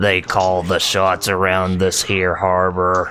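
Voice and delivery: flat monotone put-on voice. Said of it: "he sounds very monotone like Ben Stein".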